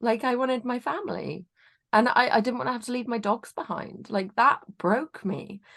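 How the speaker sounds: tearful crying speech. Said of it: "I am crying".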